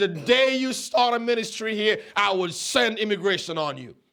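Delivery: ordinary talk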